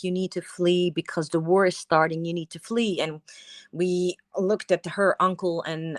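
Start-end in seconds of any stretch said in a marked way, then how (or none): none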